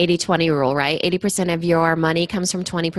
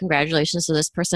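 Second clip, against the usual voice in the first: plain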